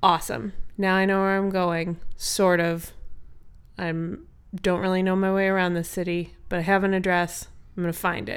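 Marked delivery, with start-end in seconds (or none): none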